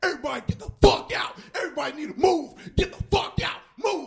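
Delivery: furious, high, angry shouting. Retelling a cop behind him in a crowd, imitating an angry shout. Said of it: "who is this angry?".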